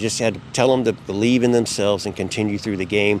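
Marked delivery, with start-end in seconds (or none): none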